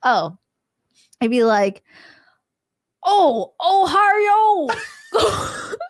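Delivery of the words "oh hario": very high, put-on Japanese accent with oh stretched. Asked to introduce themselves in their truest Japanese accent: Japanese accent. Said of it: "truest Japanese accent?".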